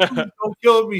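put-on groveling, high, desperate pleading tone. Retelling a movie scene where a character begs: imitating someone begging for life. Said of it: "begging for his life like a fucking chump".

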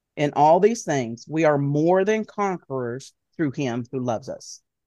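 ordinary talk, nothing marked

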